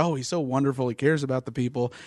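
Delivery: ordinary delivery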